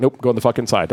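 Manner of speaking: normal talking voice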